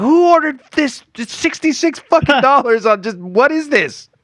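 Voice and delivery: put-on, very high, screaming scolding mother voice. Retelling a mother finding the bill for ordered videos: imitating mom screaming. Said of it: "my mom screaming at us".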